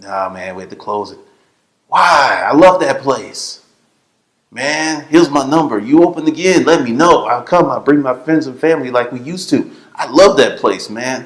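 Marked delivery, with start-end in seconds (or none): 1.9-11.3 put-on heavy Spanish accent, laid on thick, raised voice. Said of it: "he had that thick accent".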